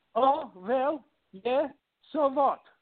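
put-on heavy Hungarian accent. Retelling how the speaker's grandmother answered a rude question, heavy Hungarian accent. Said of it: "in a very heavy accent".

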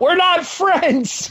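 mock shouted, very high yell. Recapping a wrestling segment, retelling what a wrestler yells after freeing himself, retelling a yell. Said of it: "he yells out".

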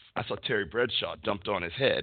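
normal talking voice

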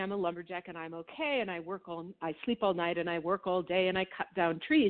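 ordinary talk, nothing marked

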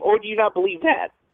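voice breaking, cracking partway through. Asking about a first-round playoff matchup, voice cracking. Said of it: "My voice just cracked".

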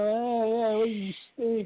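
acted jeering tone. Retelling a subway scene where a girl taunts him: imitating a mocking taunt. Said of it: "making fun of him".

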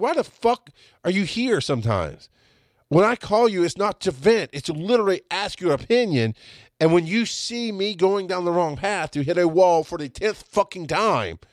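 put-on furious yell, high and drawn-out. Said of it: "And I yelled at him".

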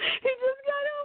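embarrassed giggling laughter.

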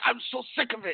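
mock exasperated, furious, fed-up outburst. Retelling a post-match complaint after the match: imitating someone yelling angrily. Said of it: "getting mad".

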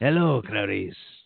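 low, grumbly delivery. Trying a Hannibal Lecter impression: grumbly Hannibal Lecter impression. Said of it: "you're a little too grumbly with it".

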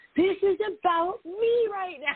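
play-acted very high, stretched-out, drawn-out screaming. Retelling a dream of yelling at a client: retelling a scream. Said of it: "I was screaming at him".

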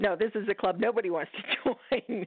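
talking through laughter. Retelling how the group answered strangers who wanted to join: retelling a laughing reply. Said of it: "We all burst out laughing".

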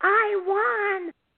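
shrill, very high excited scream. Telling a story about a woman at a slot machine, retelling a scream. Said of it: "and she screams".

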